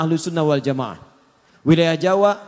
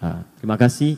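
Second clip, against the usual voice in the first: kindly, mild, gentle, polite tone; 8 semitones lower than usual. Contrasting a rude refusal with a polite thank-you, gentle, soft reply. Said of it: "Itu lembut".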